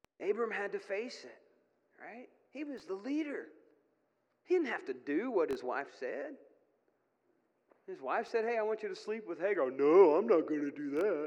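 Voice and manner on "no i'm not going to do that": very loud, bellowing dopey dumb man voice. Speaker voicing what Abram should have told his wife, Abram in a dumb man voice. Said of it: "only not in a dumb man voice".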